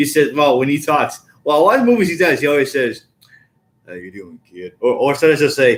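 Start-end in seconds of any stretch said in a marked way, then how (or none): 3.9-4.7 very quiet, hushed, softly murmured film-style delivery. Showing another speaker an impression of Sam Elliott: Sam Elliott voice. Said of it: "I do his voice really well".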